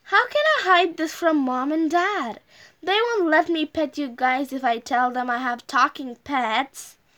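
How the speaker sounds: plain reading voice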